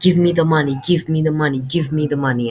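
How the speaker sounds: mock sobbing, whiny crying voice. Telling how a brat begged him for money, imitating someone crying and begging. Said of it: "he's crying like".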